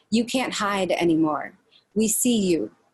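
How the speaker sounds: ordinary talk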